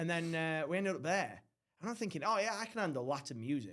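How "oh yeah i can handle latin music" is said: ordinary talk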